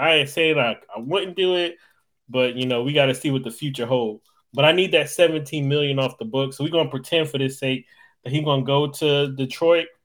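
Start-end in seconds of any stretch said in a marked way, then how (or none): none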